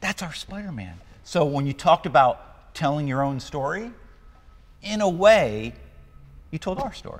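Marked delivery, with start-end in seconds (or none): 0.0-1.0 acted, hushed, very quiet gasping wonder. Recounting pointing at the screen alone in the theater, retelling an awed gasp.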